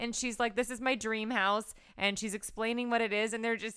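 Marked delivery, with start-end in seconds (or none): none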